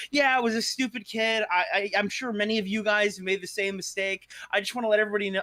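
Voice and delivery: mock ranting tone. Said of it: "he would go on a rant".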